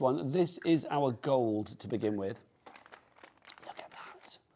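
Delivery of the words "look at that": hushed, awed, delighted, very soft whisper. Showing a gold luster wax on air, whispering. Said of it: "I just start whispering".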